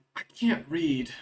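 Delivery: barely audible, very quiet whisper. Voicing a courier leaning forward to another character: quiet whisper. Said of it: "very quietly whispers as he leans forward".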